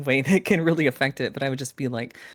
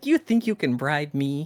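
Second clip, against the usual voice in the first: indignant, offended squirrel voice. Voicing a squirrel that refuses a bribe: offended squirrel voice. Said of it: "The squirrel's really like".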